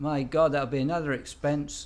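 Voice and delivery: loud, poorly done put-on Scottish accent. Retelling what the speaker's wife said about the cost, in a bad Scottish accent. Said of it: "That's not a Scottish accent".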